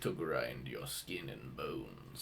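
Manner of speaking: very low, hushed, drawn-out, creepy murmur. Retelling what a creature with grinding teeth said on a show, really low voice. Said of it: "he would always talk in a really low voice".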